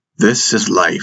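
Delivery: ordinary delivery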